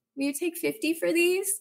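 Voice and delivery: timid, sheepish, very high-pitched voice. Retelling an own haggling offer, imitating own sheepish ask. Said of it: "very sheepishly".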